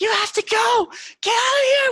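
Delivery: frantic, very high, loud terrified scream through tears. Voicing a sobbing, terrified character screaming at a cornered player: screaming in terror. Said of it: "she's just screaming at you".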